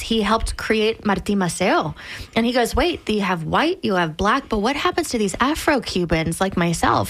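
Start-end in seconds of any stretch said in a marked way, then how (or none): none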